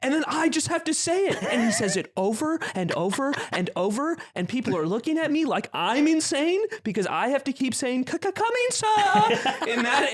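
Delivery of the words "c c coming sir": very high, stammering servant voice with servile cadence. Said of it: "in that fucking cadence and accent".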